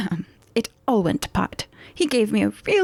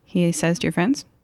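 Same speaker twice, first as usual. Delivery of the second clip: ordinary delivery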